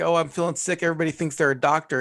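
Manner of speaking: very sarcastic, acted-out comic delivery, stand-up style. Retelling a comedian's bit to another speaker: sarcastic Dom Irrera impression. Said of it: "he does very sarcastic humor where he's like".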